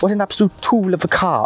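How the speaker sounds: mocking Welsh accent. Speaker retells what a man said when netting a carp, in a put-on Welsh accent. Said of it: "that was my best Welsh accent".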